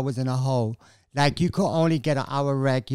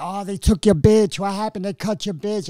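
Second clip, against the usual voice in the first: put-on scream, higher; 5 semitones higher, 3 dB louder than usual. Retelling how the others taunted over a husband being cut: imitating people screaming.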